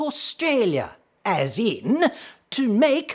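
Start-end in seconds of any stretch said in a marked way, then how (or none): 0.0-1.0 posh royal British accent, raised pitch. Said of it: "the way Her Royal Highness Liz Regina would say it".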